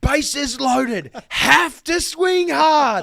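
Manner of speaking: very high, very slow, drawn-out jeering shout. Retelling yelling out at the batter Wardy, acting out a yelled heckle. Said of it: "I'm just yelling out".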